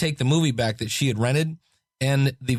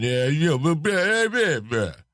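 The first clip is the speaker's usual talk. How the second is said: put-on New York accent. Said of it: "he talks like this".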